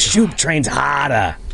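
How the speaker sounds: put-on Boston accent. Imitating a wrestler who goes by Shoop: imitating a Boston accent. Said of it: "He has that Boston accent. He goes".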